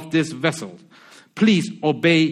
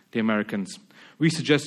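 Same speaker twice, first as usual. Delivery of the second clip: usual speaking voice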